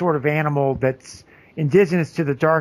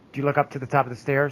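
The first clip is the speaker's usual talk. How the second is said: ordinary talk, nothing marked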